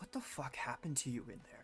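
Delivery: hushed quiet voice. In a role-play, the speaker asks a group member this so outsiders can't hear, hushed. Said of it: "in like a sort of a hushed tone".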